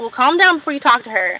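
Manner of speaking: ordinary talk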